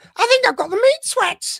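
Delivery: strained, squeezed-out voice, very high and loud. Speaker imitates how a man in a video said his line, very high voice. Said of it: "It went very high".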